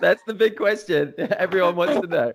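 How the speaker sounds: high, laughing voice.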